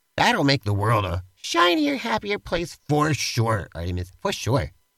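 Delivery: patronizing, condescending, falsely reassuring tone. Agreeing with artemis about fiction for young men, sounding patronizing. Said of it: "You sound so patronizing".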